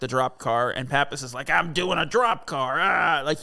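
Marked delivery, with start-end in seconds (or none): 1.5-2.8 put-on angry voice. Retelling a film scene where Pappas must work the drop car: imitating Pappas, pissed. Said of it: "he's pissed about it".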